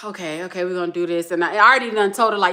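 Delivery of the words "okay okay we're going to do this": trying to sound cool while scared. Retelling waiting in line for a roller coaster: retelling trying to act cool while scared. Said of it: "I'm trying to be cool".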